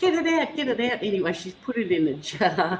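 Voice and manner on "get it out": put-on scream, much higher, slower. Retelling finding a huntsman spider on the wall, re-enacting a scream. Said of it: "and I'm screaming at it".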